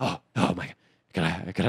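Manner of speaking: mimicked nervous energy. Telling how a man found his dirty laundry, imitating his nervous talk. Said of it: "He had really nervous energy".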